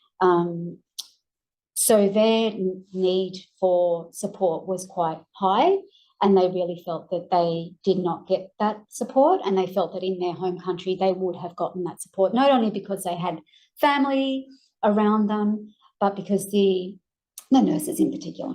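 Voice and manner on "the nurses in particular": voice giving out to a near whisper. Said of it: "sorry, I'm losing my voice".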